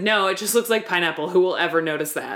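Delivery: ordinary delivery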